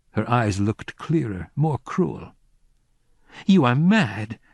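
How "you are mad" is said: violent outburst of words flung out. Reading a story aloud, a woman's retort to the narrator: said violently. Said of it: "she said violently".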